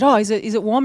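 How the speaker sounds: ordinary talk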